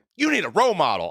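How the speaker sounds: put-on frustrated exasperation. Retelling a scene where a man answers a failed carjacker, mock-frustrated. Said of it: "he's all frustrated and like".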